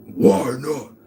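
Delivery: drawn-out, wailing demonic howl. Mimicking someone you refuse to work with: imitating a demon wailing. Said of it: "you sound like a demon wailing".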